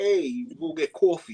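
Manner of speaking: put-on slow, old-school New York accent. Explaining New York accents, giving an example line: New York accent. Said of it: "that very New Yorker style".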